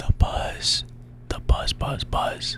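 very soft whispered echo. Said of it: "listen to us whisper".

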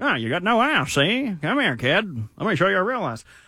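old-time gangster impression. Co-host pushed into a bit by another speaker, 1930s gangster voice. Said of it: "Why are you making me like a 1930s gangster?".

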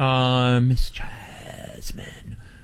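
deliberately creepy, eerie delivery. Host addressing Jasmine on air, saying her name in a creepy voice. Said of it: "Why did you say my name like that? That sounded creepy".

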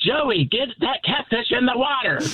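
very high, loud yell. Retelling a fishing mishap, quoting a yell at Joey: imitating Joss yelling. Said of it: "Joss is yelling at him like".

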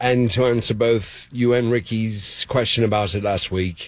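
put-on English accent, slowing down. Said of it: "the English accent was fantastic".

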